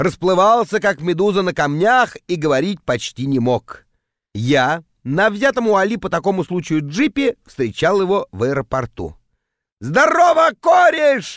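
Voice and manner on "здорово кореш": put-on very high, shrill, loud drunken bellow. A narrator reads a drunk arrival greeting his friend at the airport: drunken yell. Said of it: "заорал он дурным пьяным голосом".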